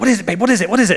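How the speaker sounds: acted-out winded, puffing, panting, urgent speech. Retelling running up the stairs to a screaming child's room, retelling puffing and panting. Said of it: "puffing and panting".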